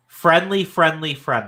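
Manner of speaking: ordinary talk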